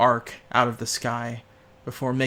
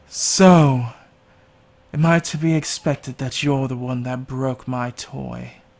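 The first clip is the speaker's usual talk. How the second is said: loud, tinny voice like through a tin can; 6 dB louder than usual. A hovering winged creature addresses the group, as if speaking through a can. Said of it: "someone speaking through a can".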